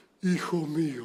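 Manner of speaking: low, soft, booming movie god voice.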